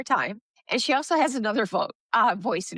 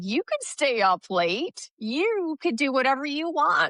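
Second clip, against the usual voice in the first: cocky, swaggering pirate voice, pitched up; 5 semitones higher than usual. Describing voices in a client's head, doing a swaggering Captain Jack impression. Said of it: "he gets that smile, that swagger. And he's like".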